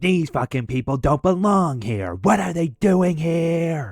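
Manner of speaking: high, unhinged, drawn-out demonic rant, acted out.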